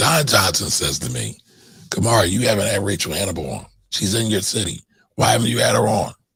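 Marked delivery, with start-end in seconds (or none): 1.9-6.1 put-on rough, gruff, aggressive, in-your-face voice. Retelling what Don Johnson demanded, imitating Don Johnson's gruff aggression.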